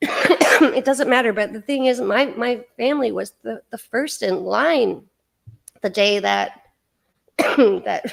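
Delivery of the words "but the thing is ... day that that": emotional, choked-up voice with stumbling words. Telling a personal story about the family, getting choked up. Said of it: "I'm getting choked up as always".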